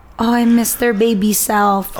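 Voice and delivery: ordinary delivery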